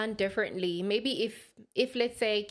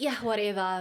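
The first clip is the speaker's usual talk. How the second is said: mock casual, nonchalant, shrugging tone. Imitating the other speaker asking for the divorce: imitating a nonchalant tone. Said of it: "you saying it so nonchalantly".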